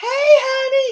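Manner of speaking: put-on very high, loud old lady voice, honey drawn out. Imitating an older lady cashier greeting people as they walk in, high-pitched older lady voice. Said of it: "she had this real high pitched voice".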